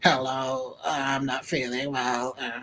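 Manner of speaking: quiet croaking robot voice. Showing how he should have faked being sick to his manager, in a Dalek voice. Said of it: "Turn it into like a Dalek".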